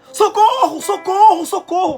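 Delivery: put-on desperate shout. Retelling Peter sinking in the water: imitating Peter shouting desperately. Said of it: "Porque ele começou a gritar".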